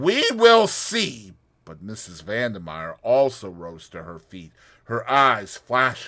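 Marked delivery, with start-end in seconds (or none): 0.0-1.3 very high, shrill, loud, ugly threatening snarl. Narrator reading the Russian's reply to a woman's refusal, snarled. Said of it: "snarled the Russian".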